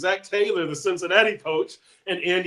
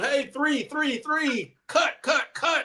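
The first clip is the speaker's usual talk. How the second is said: play-acted, high, loud shouted yell; 7 semitones higher than usual. Retelling calling out as cutoff man in a baseball game: imitating own past yelling. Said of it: "I'm yelling".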